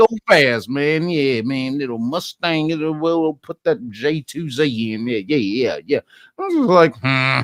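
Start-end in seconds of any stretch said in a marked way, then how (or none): 0.0-5.2 thick, old, laid-on-thick put-on Louisiana accent. Imitating a guy from the story talking about cars, in a thick louisiana accent. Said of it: "that thick old Louisiana accent".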